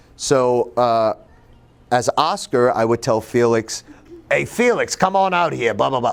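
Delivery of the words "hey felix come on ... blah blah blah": put-on gruff older man's voice. Retelling a high school role as Oscar: imitating a gruff older man's voice. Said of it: "this older man's voice".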